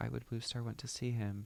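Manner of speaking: plain reading voice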